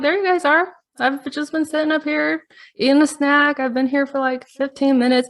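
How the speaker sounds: put-on, laid-on Texas accent, high pitch. Retelling finding her sitting on a rock, quoting her in a Texas accent. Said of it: "I don't know why I'm doing a Texas accent".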